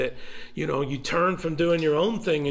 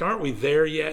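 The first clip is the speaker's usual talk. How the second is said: ordinary talk, nothing marked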